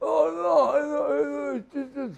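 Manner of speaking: hard, raspy voice, high and drawn out. Retelling meeting a wrestler at a restaurant: imitating Johnny Ace's hard raspy voice. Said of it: "cut the shit on the hard voice shit".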